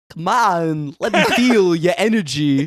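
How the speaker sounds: very slow, high-pitched drawl with every word stretched. Showing how the school DJ sounded: Christopher Walken impression. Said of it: "do a Christopher Walken impression".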